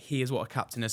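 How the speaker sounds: usual speaking voice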